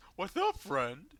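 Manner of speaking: goofy, loud, high clown character voice. Greeting another character in a role-play scene, in a clown voice. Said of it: "I did like a clown voice".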